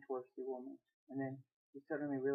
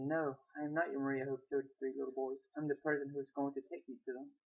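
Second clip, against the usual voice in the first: plain reading voice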